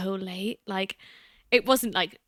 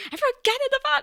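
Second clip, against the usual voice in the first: put-on, very high-pitched hollered shout. Retelling dad calling everyone back into the van: imitating dad shouting. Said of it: "He was, like, shouting".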